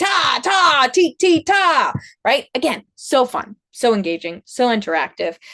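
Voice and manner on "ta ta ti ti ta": forte: loud, high, very slow and strong. Reading a story aloud, leading listeners through the rhythm in a forte way: loud and strong. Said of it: "Can we do it in a forte way?".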